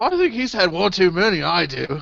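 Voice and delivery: bad, shoddy put-on British accent. Voicing townsfolk in a tavern brawl: shitty British accent. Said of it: "everyone in this town suddenly has shitty British accents".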